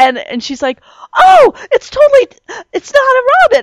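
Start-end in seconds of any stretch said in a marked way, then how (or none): 1.2-3.6 very high-pitched, all-excited, drawn-out exclaim. Retelling a daughter spotting an unfamiliar bird: imitating someone excited. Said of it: "she's all excited".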